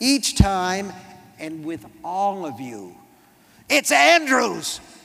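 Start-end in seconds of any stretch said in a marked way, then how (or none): 3.7-4.8 sudden, loud, rough, raw-edged roaring bellow. Reading a novel, a character cuts in to correct his name, bellowing. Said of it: "He bellows it".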